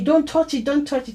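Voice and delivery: mock scared cry, called out high. Retelling a brother's warning not to touch the money: imitating a brother shouting. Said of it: "my brother was shouting at me".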